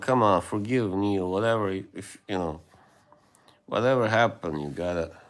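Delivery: ordinary delivery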